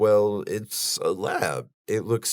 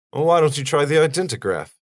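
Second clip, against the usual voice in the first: very stiff, blunt, raised delivery; 6 semitones higher, 5 dB louder than usual. Recapping a Bond film scene, quoting Tanner's reply to Bond: stiff, blunt Tanner voice. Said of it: "stiff and blunt as fuck".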